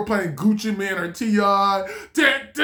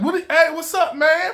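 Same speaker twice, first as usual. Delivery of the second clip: laid-back, casual street-slang delivery, pitched up; 8 semitones higher than usual.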